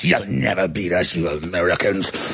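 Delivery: very low, slow, drawn-out demonic voice. Retelling a man's words to the speaker, in a demonic voice. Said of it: "He actually talked like a demon".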